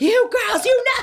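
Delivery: very high, drawn-out scream. Imitating how Abby Lee Miller talks every episode: imitating Abby Lee Miller screaming. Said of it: "she's just screaming".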